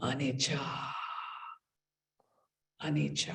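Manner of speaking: deep, low, soft, gravelly voice.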